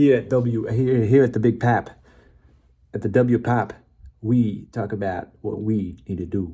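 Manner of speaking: put-on New York accent, laid on thick. Redoing a radio station promo after dropping a Texas accent, New York accent. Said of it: "Go Nor- New Yorkin".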